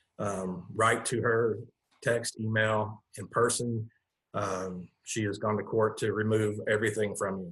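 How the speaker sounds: ordinary talk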